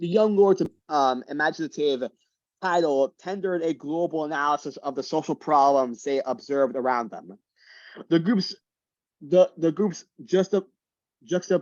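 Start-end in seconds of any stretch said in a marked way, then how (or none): 8.1-11.6 stuttering, stumbling restart, tripping over words. Reading a passage aloud and tripping over a word; stuttering. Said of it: "I was just stuttering there".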